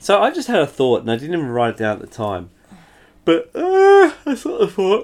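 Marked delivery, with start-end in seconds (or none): 3.2-5.0 talking through a high yawn. Telling the others about a thought they had, yawning. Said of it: "that's a yawn, people".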